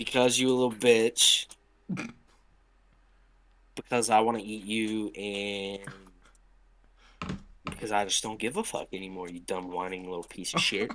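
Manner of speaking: mocking, sarcastic, condescending, patronizing tone. Answering a request to respond to hunting critics: sarcastic and patronizing. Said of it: "respond to these arguments in your most sarcastic and patronizing way".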